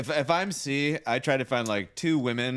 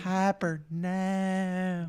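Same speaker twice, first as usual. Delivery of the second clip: put-on pitched-up drawl with "now" drawn out; 6 semitones higher, 3 dB quieter than usual.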